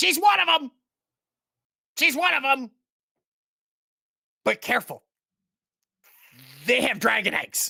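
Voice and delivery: high, loud, alarmed shout. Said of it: "Ambrosius goes".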